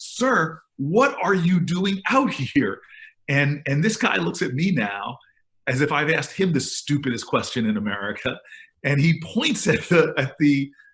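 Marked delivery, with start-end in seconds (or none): 0.0-2.8 slow, raised, drawn-out shouted yell. Retelling calling through the rolled-down window to an elderly man in the rain, retelling a yell. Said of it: "but I yell at him".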